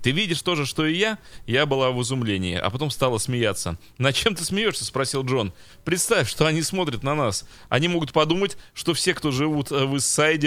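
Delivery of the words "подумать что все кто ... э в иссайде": ordinary talk, nothing marked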